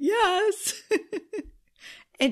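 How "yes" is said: play-acted small, very high, sheepish, embarrassed voice. Recalling answering yes with supreme embarrassment, mock-embarrassed 'yes'. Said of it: "With that kind of voice, like".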